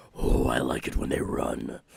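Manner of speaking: very low, very loud, rough, dark, booming voice. Voicing an unseen figure heard as a character runs away: very dark voice. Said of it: "you can hear a very dark voice".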